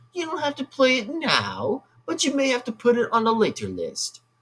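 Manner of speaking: light British accent, high and sing-song. Asking another person to put a game on a later list: slight British accent. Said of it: "a little bit of a British one".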